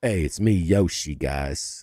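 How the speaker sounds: very low, bass-heavy, deep character voice. Mocking a movie's casting, the speaker does a deep bass Yoshi voice. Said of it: "why is Yoshi got some bass in his voice?".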